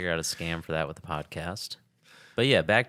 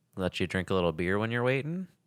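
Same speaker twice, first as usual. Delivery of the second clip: ordinary delivery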